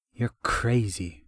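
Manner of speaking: scornful, sneering tone. Narrator reads a character's line to the laughing Prosathian, sneering. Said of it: "Ravania sneered at the Prosathian".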